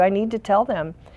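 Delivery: ordinary talk, nothing marked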